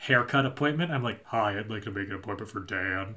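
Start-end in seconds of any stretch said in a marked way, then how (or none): 1.2-3.2 deepened low soft put-on masculine voice, in-charge. Retelling calling for a haircut appointment, the speaker does a pitched-down masculine phone voice. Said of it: "men pitch their voice down to try and seem more like masculine".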